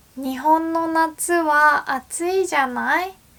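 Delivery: voice lifted up high, high-pitched. Showing a Japanese phrase that sounds feminine: high-pitched voice. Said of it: "my voice is high-pitched right now".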